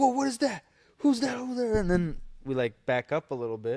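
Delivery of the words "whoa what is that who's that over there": put-on very high, spooked, freaked-out kid voices. Retelling how the kids reacted to a figure in the corner: imitating freaked-out kids. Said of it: "the kids are freaking out".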